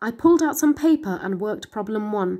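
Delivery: plain reading voice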